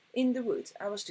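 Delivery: ordinary delivery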